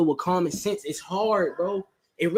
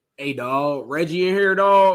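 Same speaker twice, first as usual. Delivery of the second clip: put-on deep, low voice with slight country accent; 4 dB louder than usual. Retelling a voice he heard coming into his room: deep voice, slight country accent. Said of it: "it was a deep voice ... a little country accent".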